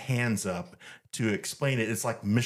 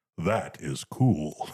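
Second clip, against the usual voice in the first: low, electronic-sounding sci-fi villain voice; 5 semitones lower than usual. Retelling a man in a helmet looking at his purchase: Darth Vader voice. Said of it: "in Darth Vader voice goes".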